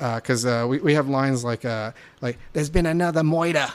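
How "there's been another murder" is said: bad put-on Bronx accent, higher, slower. Reviewing a movie, quoting one of its lines in a terrible Bronx accent. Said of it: "trying to do a terrible Bronx accent".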